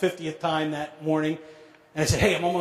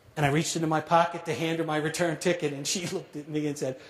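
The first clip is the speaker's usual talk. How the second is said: usual speaking voice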